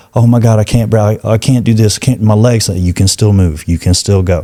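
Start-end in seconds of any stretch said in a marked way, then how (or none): none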